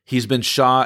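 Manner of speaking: ordinary talk, nothing marked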